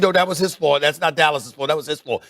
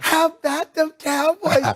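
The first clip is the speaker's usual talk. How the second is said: very high, slow, drawn-out stage whisper; 10 semitones higher than usual. Retelling what a grandma said to the speaker: imitating a half-whisper. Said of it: "Whispering it to me".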